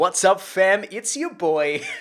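hyped, high-energy delivery. Recalling a YouTube series intro: imitating a hyped YouTuber voice. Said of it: "that voice, that kind of energy".

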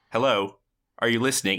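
ordinary talk

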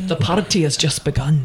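put-on Scottish accent. Trying other versions of a line, the speaker says it in a scottish accent.

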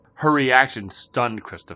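ordinary delivery

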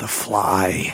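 words hissed out harshly, severe and sharp. Imitating how the guy says the movie title: severe hiss. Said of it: "with this severe like hiss, the guy just goes".

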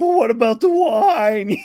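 high, loud, comical movie-skeleton voice. Quoting the skeleton from a childhood movie, imitating the skeleton's voice. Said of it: "his voice is so funny".

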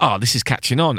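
ordinary talk, nothing marked

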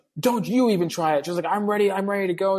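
imitated screaming. Speaker recounting a confrontation with a screaming woman, retelling her screaming. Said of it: "all her screaming".

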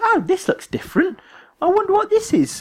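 very high character voice with swooping pitch. Describing a game trailer, quoting the character: Conker voice. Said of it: "Same voice".

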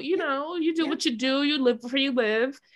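put-on condescending voice. Retelling what a man said to her, imitating a condescending tone. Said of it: "every word drips the condescension".

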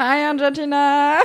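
mocking, put-on Valley Girl accent. Mocking another speaker's greeting: mocking Valley Girl voice. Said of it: "Pourquoi t'as une voix de Valley Girl ?".

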